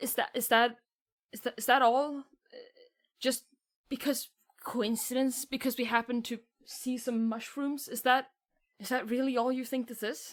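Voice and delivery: very shaky, trembling, stumbling, wounded voice. Voicing a deeply hurt character answering a player: speaking very shakily. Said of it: "very shakily".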